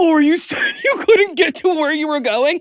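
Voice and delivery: put-on mocking, sarcastic tone. Retelling how people blocking traffic answered the speaker, imitating a mocking tone. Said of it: "I know you're mocking me".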